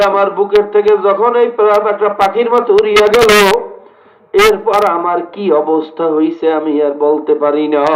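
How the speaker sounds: ordinary talk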